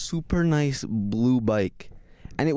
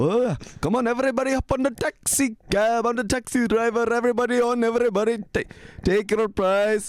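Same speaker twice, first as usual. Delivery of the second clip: put-on very high-pitched shouting with an Indian accent; 10 semitones higher than usual. Retelling sitting on a girl's bike after school, the speaker yells in a random indian accent. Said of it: "I just start yelling in a random Indian accent".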